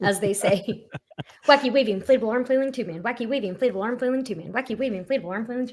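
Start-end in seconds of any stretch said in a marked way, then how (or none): 1.5-5.7 rattled off rapid-fire at top speed. Talking to people on YouTube, the speaker repeats their verbal stim phrase as fast as possible. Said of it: "practice saying it as fast as possible".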